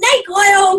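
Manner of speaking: hostile, high, loud jeering yell. Retelling how a lady yelled back: imitating someone yelling. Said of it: "she yelled out".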